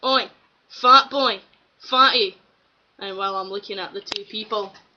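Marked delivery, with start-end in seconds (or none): 0.0-2.4 loud, drawn-out bellowing shout. Retelling a guy calling out at a midnight bus stop, retelling a stranger's shout. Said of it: "the guy shouts".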